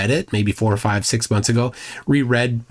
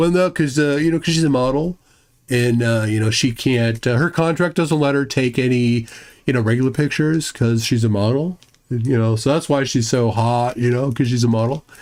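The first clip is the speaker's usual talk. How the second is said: rambling middle schooler voice with "uh" and "you know". Mocking a middle school kid bragging to friends: imitating a middle school kid. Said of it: "It's the middle school kid that's like".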